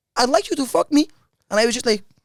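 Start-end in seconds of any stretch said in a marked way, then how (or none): 0.2-1.1 put-on Norwegian accent, pitched up. Retelling what a woman said to the speaker, in a Norwegian accent. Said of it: "I'll try my best to do a Norwegian accent".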